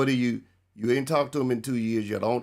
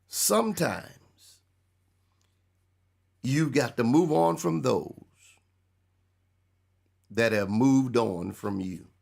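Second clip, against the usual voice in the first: very slow, drawn out, deliberate, word by word. Repeating a point one more time for those in the back: real slow. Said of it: "I'm going to say it real slow".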